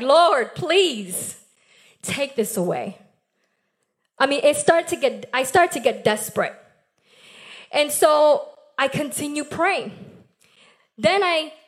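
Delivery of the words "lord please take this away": mock begging, pleading tone, slower. Recalling praying to God through pain, retelling a begging prayer. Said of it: "a supplication a begging".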